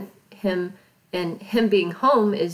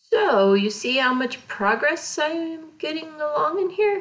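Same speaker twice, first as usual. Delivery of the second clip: ironic, sarcastic tone with raised pitch; 7 semitones higher than usual. While painting a kit on video, the speaker asks about their progress, sarcastic. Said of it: "I'm totally being sarcastic here".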